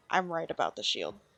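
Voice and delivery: put-on character whisper, hushed and private. Playing a character who turns to a friend: whispering in character. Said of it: "I turn and I whisper to her".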